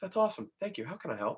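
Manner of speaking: soft courteous radio voice. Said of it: "they're doing it in a nice way".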